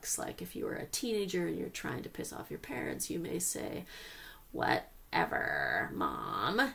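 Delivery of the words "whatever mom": deep, swooping, very low creaky vocal fry. Demonstrating how a teenager might talk back to their mom, vocal fry. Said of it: "I'm using vocal fry".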